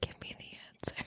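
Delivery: whispered speech. Retelling what another player whispered to them during a guessing game: retelling a whisper. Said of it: "She's like whispering to me".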